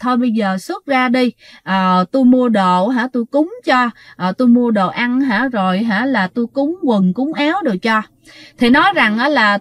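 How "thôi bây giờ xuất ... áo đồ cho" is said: ordinary talk, nothing marked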